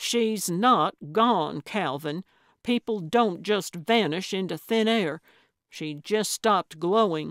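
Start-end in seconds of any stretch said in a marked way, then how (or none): none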